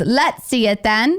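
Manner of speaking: put-on high, slow snotty kid voice. Asked to try a voice, imitating a snotty twelve-year-old Hermione on a train. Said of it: "She's a little snotty twelve-year-old Hermione".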